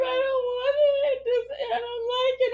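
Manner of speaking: put-on words sobbed out in a crying child's voice. Retelling a child refusing pizza, imitating a crying child. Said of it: "crying and she's like".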